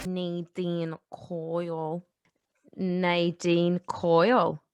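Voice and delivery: attempted put-on Northern accent. Saying a guest's name again after a failed try: attempted Northern accent. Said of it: "I tried to do my best Northern accent".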